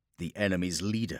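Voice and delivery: ordinary talk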